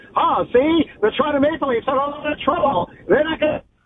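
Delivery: high 1920s voice. Speaker offers to do a 1920s voice, then tries it: 1920s-style voice. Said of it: "Do you want me to do like a 1920s voice?".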